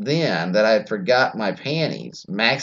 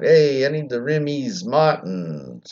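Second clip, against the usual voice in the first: very slow put-on Philadelphia accent, extra S sounds; 3 semitones higher than usual. Showing how a philadelphia accent adds extra s sounds: put-on philadelphia accent. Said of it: "If you did Philadelphia, you throw in S's".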